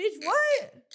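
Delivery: high, loud, incredulous outburst.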